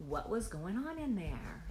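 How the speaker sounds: ordinary delivery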